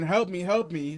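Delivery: acted-out screaming. Speaker recounts a guard kicking a bloodied man, retelling a scream.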